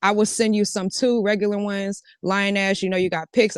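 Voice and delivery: ordinary talk, nothing marked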